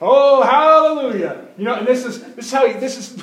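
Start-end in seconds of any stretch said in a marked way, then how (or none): 0.0-1.5 yelling, higher pitch and louder. Retelling how a drywall worker at church praised while working: imitating someone yelling. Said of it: "constantly in there yelling these things like".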